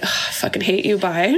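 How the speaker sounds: mock muttering under breath. Speaker describing their lack of patience with people, retelling an under-breath remark. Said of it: "under my breath".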